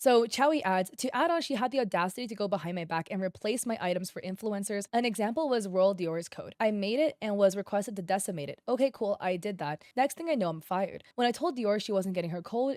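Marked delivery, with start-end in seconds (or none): none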